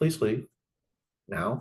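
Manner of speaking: restrained, understated, even, no-drama tone. Retelling asking another coach to leave, repeating the words: very quiet. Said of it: "at about that tone of voice, very quiet".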